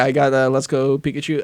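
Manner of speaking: ordinary talk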